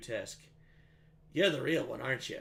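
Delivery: under-breath whisper. Voicing a character who speaks to another character, whispering under his breath. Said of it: "he whispers underneath his breath to you".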